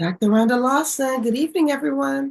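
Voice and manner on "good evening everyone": slightly raspy, hoarse, pitched-up voice. TV show co-host greeting viewers while still getting the voice back, slightly raspy. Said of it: "Sorry I sound a little raspy".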